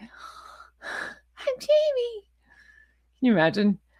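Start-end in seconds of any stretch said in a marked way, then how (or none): 0.0-2.2 put-on breathy little baby voice. Mocking how a woman talks, imitating a baby voice. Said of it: "the Jamie baby voice".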